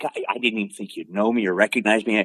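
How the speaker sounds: plain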